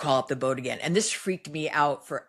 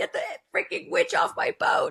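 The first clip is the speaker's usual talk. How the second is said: mock panicked, urgent, frantic yell. Retelling yelling at someone who misheard her and offered a sandwich: retelling a frantic yell.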